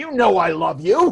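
very loud, accusing, hostile tone put on as fondness. Retelling what he once said, the speaker mimics hostility disguised as affection. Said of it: "It's hostility disguised as affection".

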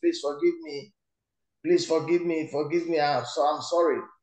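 normal talking voice

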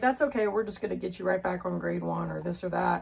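ordinary delivery

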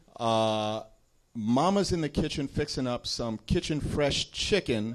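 ordinary talk

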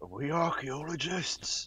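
hushed, half-whispered, quiet aside. Leaning down to a halfling companion to ask quietly: half-whispering. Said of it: "I'm just gonna whisper".

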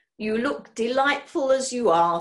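unctuous, greasy, oily smooth voice. A caller compliments the woman he brings flowers to, in an oily voice. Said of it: "said Mr. Knapsack in an oily voice".

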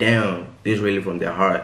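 ordinary talk

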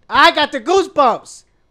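loud, high, spooked outburst.

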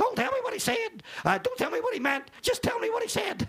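put-on very high, quick, fast old Tennessee accent. You recall what the man who opened your church would say, imitating Billy's old Tennessee accent. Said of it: "he would say in his old Tennessee accent".

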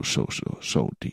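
low, hushed, spooky whisper.

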